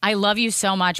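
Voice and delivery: ordinary talk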